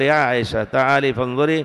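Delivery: ordinary talk, nothing marked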